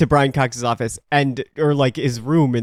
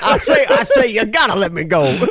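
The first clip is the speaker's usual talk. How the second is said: high-swinging voice with big pitch swoops; 8 semitones higher, 4 dB louder than usual. Retelling a scene where a kidnapped man pleads to be let go: mock Colonel Sanders voice. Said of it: "he's dressed like Colonel Sanders".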